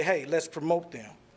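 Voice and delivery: ordinary talk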